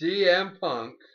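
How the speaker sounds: drawn-out, slow, loud, high ring announcer call.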